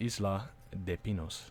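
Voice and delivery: hushed, quiet, put-on Spanish accent. Reading out a place name while playing a game: put-on Spanish accent. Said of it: "you like my Spanish accent?".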